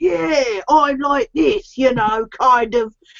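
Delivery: put-on very slow London-accented game character voice. Imitating the other player's game character: London accent game character voice. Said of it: "London as well".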